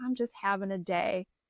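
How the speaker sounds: mock-tearful, crying voice. Retelling answering a man asking for a license, tears flowing: retelling own tearful words. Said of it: "all the tears are just flowing".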